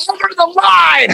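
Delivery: mock shrill, very high, raspy yell. Retelling a bowling scene where he reacts to Smokey's shot: retelling a scream. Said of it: "he just screams".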